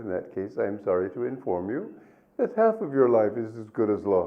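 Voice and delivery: ordinary talk, nothing marked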